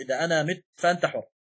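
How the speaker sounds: ordinary delivery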